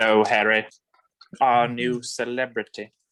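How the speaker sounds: deep wizard-professor voice, dropped down low. Discussing Harry Potter picks, greeting Harry in an Alan Rickman impression. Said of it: "doing an Alan Rickman impression".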